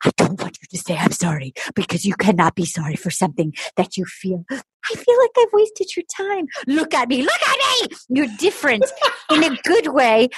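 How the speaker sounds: put-on whispering voice. Retelling a scene where one person starts whispering: imitating someone whispering. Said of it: "And then he starts whispering".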